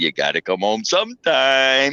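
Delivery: put-on laughter while speaking. Retelling how a man on the step called after him, imitating laughing speech. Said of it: "laughing, going".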